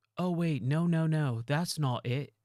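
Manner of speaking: clumsy, terrible put-on British accent. Describing a game character who interrupts when you die, the speaker quotes him in a bad British accent. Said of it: "my British accent or whatever accent he has in that".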